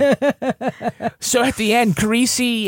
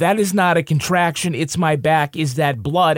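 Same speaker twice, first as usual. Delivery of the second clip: ordinary talk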